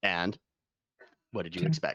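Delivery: very low, bottomed-out, crazy deep lizard creature voice. Voicing a small lizard who stands up to speak: crazy deep lizard voice. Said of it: "your voice is crazy deep".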